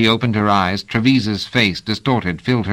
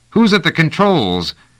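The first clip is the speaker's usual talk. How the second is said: high-pitched cry of anger and confusion; 8 semitones higher, 3 dB louder than usual. Reading a novel aloud, the narrator voices a character's angry, perplexed cry. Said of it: "Trevise cried out, halfway between anger and perplexity".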